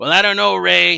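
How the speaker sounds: put-on drunk voice. Voicing an absent friend's rebuttal: imitating Julius sounding drunk. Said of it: "he sounds a little bit drunk tonight".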